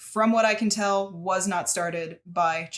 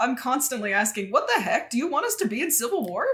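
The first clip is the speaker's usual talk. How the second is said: put-on full Midwestern accent, pitched up; 6 semitones higher than usual. Showing off a Palin impression that comes out as a Midwestern accent. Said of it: "I'm trying to do her accent".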